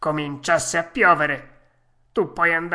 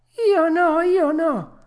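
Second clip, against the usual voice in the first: very high, slow, drawn-out sobbing cry; 14 semitones higher, 4 dB louder than usual. Pinocchio, caught by an angry farmer, answers him, crying out sobbing. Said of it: "gridò Pinocchio singhiozzando".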